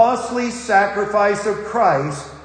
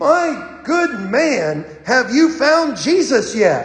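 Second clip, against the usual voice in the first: play-acted hard, severe, harsh preacher voice; 3 semitones higher than usual. Telling a joke, the preacher pulls the drunk from the water, retelling a harsh tone. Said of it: "says in a harsh tone".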